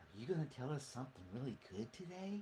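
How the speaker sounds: put-on very quiet, hushed, soft murmuring kids'-show host voice. Comparing creepy TV hosts, imitating Mister Rogers. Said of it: "like Mister Rogers going".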